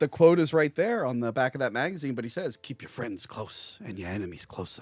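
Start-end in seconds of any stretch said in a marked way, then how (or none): 2.6-4.8 hushed, breathy, barely audible delivery. Quoting a line from a magazine's back cover, modern Pacino impression. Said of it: "that's modern Pacino".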